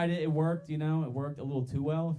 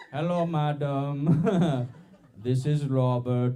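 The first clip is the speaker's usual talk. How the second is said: very slow, loud, put-on Indian accent; 5 dB louder than usual. Telling how he greeted a blind lady he picked up, in a put-on Indian accent. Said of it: "I got to see how convincing my Indian accent is".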